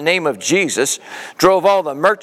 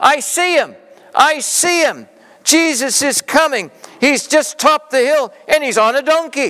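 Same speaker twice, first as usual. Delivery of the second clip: shrill, very high yelled call; 9 semitones higher than usual. David, sitting atop Benjamin above the crowd, yelling out. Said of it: "David yelled out".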